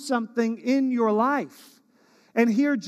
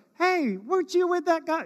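put-on middle school girl voice, much higher pitched; 9 semitones higher, 6 dB quieter than usual. Retelling Peter's denial of Jesus, a girl questions Peter in a middle school girl voice. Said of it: "that's my middle school girl voice".

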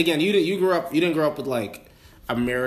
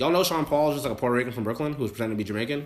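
usual speaking voice

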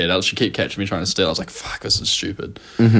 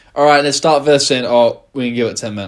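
put-on British accent; 4 semitones higher than usual. Imitating the other speaker making an excuse to a student: imitating the other speaker in a British accent. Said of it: "I went British when I was pretending to be you".

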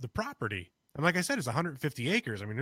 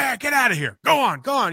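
shrill, very loud, high yelling shout; 11 semitones higher, 12 dB louder than usual. Retelling yelling at something moving in the dark: retelling own yelling. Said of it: "and I started yelling".

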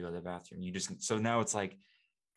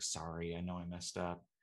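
put-on sad, timid dog voice, quieter; 6 dB quieter than usual. Voicing the dog's thoughts after it messed up: voicing the dog as sad and timid. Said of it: "kinda sits there all, like, sad, like, timid".

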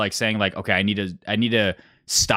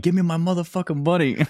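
loud, pitched-up hollering yell; 9 semitones higher than usual. Retell how a man on the table demanded his money, imitating someone yelling. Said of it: "he was just on the table yelling".

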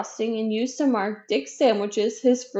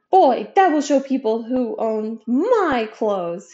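very proud, drawn-out statement tone; 4 dB louder than usual. Dick speaks to Mrs. Thompson as she sews labels on his clothes, proudly. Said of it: "he said proudly".

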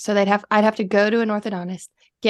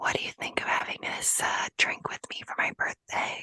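soft, breathy, barely audible ASMR whisper. Asked by another speaker to do a whisper, toasting a birthday: ASMR whisper. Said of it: "Do your whisper".

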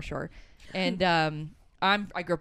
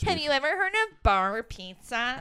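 high, very slow, stretched-out needling tone; 9 semitones higher, 3 dB louder than usual. Imitating someone defending the South Shore: Logan impression. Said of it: "that was a Logan impression".

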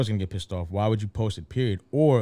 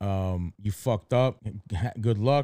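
usual speaking voice

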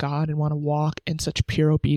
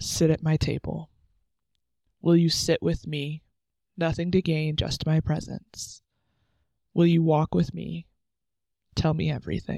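voice holding back tears. Reading aloud a piece that came in last month; holding back tears. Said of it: "I'm like trying not to cry".

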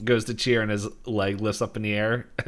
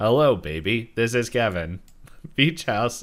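robotic, robot-like speaking voice; 3 dB louder than usual. Retelling a board game where the phone rings, doing Kevin's robotic voice. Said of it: "As the robotic voice".

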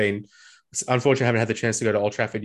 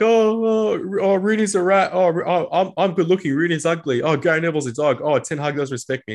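put-on weepy whine, high whiny crying voice; 7 semitones higher, 4 dB louder than usual. Mocking a struggling player's tv interview to listeners, mock crying. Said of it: "Crying like".

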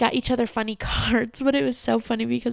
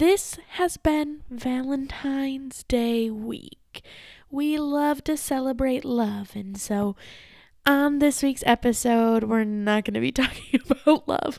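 slow, smooth, put-on romantic radio announcer voice. Podcast host introducing the Valentine's Day week episode, slow jazz romance radio voice. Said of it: "getting into like one of those slow jazz romance radio station voices".

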